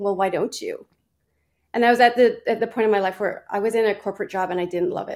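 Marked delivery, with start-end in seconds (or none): 0.0-0.9 imitated whisper, lower pitch. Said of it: "the universe whispering to me going".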